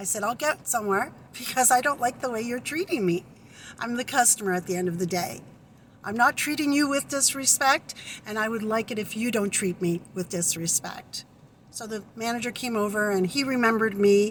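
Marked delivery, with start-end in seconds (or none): none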